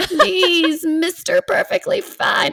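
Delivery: high-pitched, put-on goblin voice. Voicing a goblin's plea in a Lord of the Rings goblin voice. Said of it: "in the goblin voice ... more from like Lord of the Rings".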